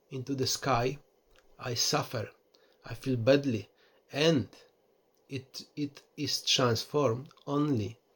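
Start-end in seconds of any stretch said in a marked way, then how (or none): none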